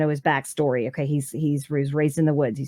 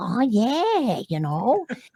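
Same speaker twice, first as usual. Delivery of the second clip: put-on old lady voice, high, drawn-out yeah; 7 semitones higher than usual. Showing the voice of an old villager woman: imitating an aunt from Rhode Island. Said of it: "she kinda had a voice like this".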